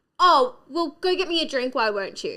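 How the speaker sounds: mock self-important, cocky, arrogant tone. Retelling how a new partner came across at a first meet: imitating a cocky arrogant man. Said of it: "really kind of arrogant".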